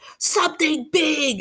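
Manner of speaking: very high-pitched hissing voice. He turns back from the window and warns the others: hissed. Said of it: "he hissed".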